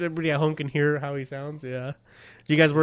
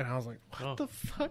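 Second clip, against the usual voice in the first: ordinary delivery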